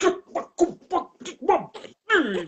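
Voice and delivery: very high, loud ranting shout, repeating. Imagining the captain going off at them: imitating Captain Sisko going off. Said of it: "If he were my captain and he went off like that".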